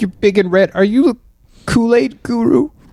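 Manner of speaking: acted crying while talking. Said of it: "I've noticed through my tears".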